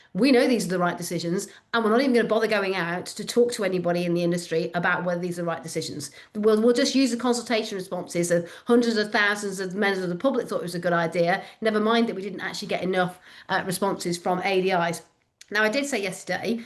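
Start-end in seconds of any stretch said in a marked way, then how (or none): none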